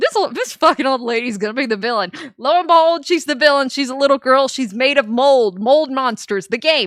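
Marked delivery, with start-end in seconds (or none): none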